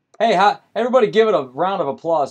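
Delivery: shrill, very loud, full-blast scream. Greeting the viewers and asking for a round of applause: screaming. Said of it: "Sorry for screaming in your ears".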